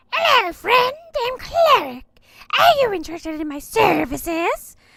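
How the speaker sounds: very shrill, very loud creature shout. Narrating a game encounter where a creature offers its services: loud shouting Cleric voice. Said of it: "The creature shouts loudly".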